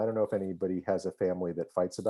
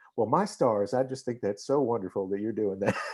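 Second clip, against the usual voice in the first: put-on sweet-toned East Texas accent; 2 semitones higher than usual. John quotes his mother's phone call to him, in a sweet east texas accent. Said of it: "My mother was a sweet East Texas accent".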